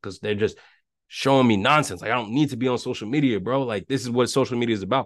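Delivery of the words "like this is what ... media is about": normal talking voice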